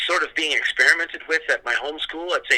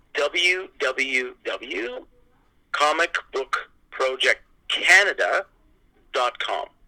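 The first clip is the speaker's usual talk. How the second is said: very slow, careful, drawn-out spelling out. Guest giving the website address for listeners to find out more, very slow. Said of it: "and I'll say this very slowly".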